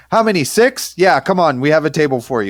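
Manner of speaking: put-on high, eager doorman-style yell. Retelling a restaurant doorman calling out to the group: imitating a doorman yelling. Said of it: "yelling at us from the door".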